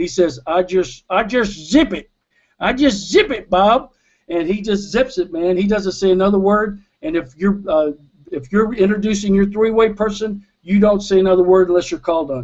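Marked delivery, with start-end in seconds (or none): 0.5-3.9 put-on easygoing American Southern accent. Retelling how Bill answered Bob once cleared to speak, in Bill's Southern accent. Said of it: "in that great Southern accent of his".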